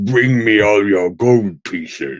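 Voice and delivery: deep, guttural monster voice. Asked to play Xanathar, trying out the voice, guttural Xanathar voice. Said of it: "The guttural Xanathar".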